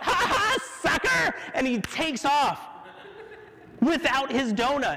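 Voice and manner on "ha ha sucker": play-acted yell, very high, shrill. Recounting a man at a drive-through window who paid and drove off, retelling a yell. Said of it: "he just yells out".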